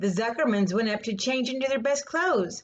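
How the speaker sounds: plain reading voice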